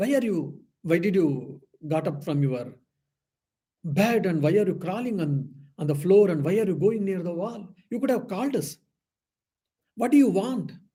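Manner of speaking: mock firm, forceful, strong, angry delivery. Retelling how a caregiver questioned the master: imitating an angry strong voice. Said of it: "in a strong voice, he asked".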